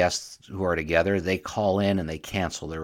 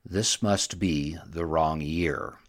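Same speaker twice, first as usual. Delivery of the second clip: put-on ominous tone; 3 semitones lower than usual. Speaker retells a story, quoting a man's line, retelling an ominous line. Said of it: "he says very ominously".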